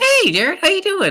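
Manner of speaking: very high, playful, whimsical talking-toy voice. Describing a hypothetical talking box with a smiley face: whimsical talking-box voice. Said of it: "it speaks in a very like whimsical".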